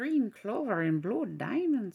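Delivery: botched fake Irish accent. Naming ink colors during an alcohol ink tutorial, bad irish accent. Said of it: "that was not an Irish accent".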